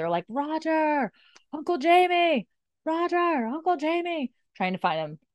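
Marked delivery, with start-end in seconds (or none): 0.3-4.3 mock calling out, very high and stretched out. Retelling riders searching for two men: imitating people calling out. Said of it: "they're all calling".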